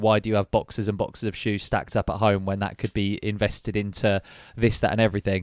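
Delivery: ordinary delivery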